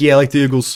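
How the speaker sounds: put-on Philly accent. Imitating how people from Philly say Eagles: Philadelphia accent. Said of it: "That's their accent".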